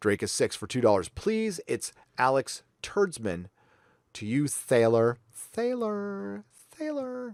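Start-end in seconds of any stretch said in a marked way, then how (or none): 1.1-7.3 put-on flamboyant voice, high, slow, drawn out. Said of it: "People hate it when I do this voice".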